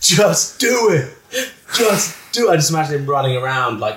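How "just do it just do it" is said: put-on, very high, drawn-out screaming. Retelling a video of Shia LaBeouf screaming: imitating Shia LaBeouf screaming. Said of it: "that video of him going".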